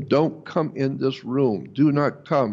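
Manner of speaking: ordinary delivery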